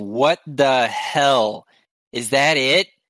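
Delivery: big shouting yell in a put-on character voice. Playing a character who yells after a giant Myconid walks away: yelling. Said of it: "He just yells".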